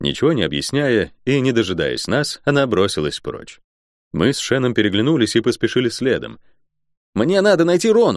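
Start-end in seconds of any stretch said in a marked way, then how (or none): 7.1-8.2 yelled, high-pitched shout. A healer calls out as the group hurries after a woman: shouted. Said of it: "крикнул целитель".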